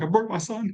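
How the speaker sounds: crying speech, very high-pitched and tearful. Retelling own words after a toddler's fall: imitating crying speech. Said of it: "I'm crying 'cause I'm like".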